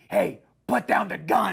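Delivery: put-on rough, creaky masked superhero voice. Imitating a masked superhero telling a bad guy to drop a gun: imitating masked superhero's put-on voice. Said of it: "But the second he just goes".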